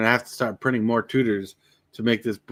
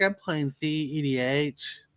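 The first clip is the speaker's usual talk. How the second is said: very slow, soft, put-on hardcore nerd drawl; 4 semitones higher, 7 dB quieter than usual. Joking about players at a game store, the speaker imitates a guy in a hardcore nerd voice. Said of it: "Why do you do that voice?".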